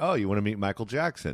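ordinary talk

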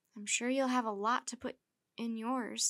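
usual speaking voice

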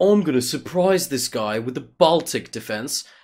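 put-on snobbish, elitist British accent. Describing a chess player's opponent, the speaker voices him: snobby British accent. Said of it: "why is everybody British today?".

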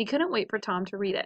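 ordinary delivery

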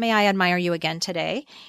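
ordinary talk, nothing marked

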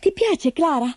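thrilled. Heidi asking Clara a question, all excited. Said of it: "chiese Heidi, tutta eccitata".

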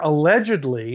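allegedly stressed and drawn out slowly.

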